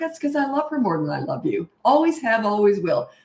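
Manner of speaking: teasing, sarcastic, swooping sing-song delivery. Retelling a reply to a child's complaint: imitating own sarcastic reply. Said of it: "I'm sarcastic".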